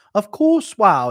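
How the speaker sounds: put-on weird, odd-sounding, high, loud South African accent. Retelling how a woman reacted to him: imitating a weird South African accent. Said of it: "She had a weird South African accent".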